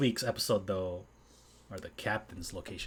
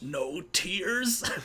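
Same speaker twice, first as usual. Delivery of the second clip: acted, very high raised voice holding back tears; 11 semitones higher, 4 dB louder than usual. Retelling someone making a face, trying not to cry: imitating someone holding back tears. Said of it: "she's, like, trying not to cry".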